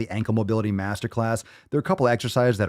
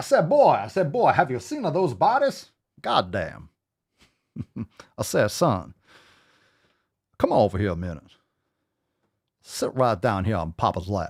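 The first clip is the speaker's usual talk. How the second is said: swooping, animated cartoon voice with wide pitch swings. Joking about bodies in a Foghorn Leghorn voice. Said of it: "like, Foghorn Leghorn".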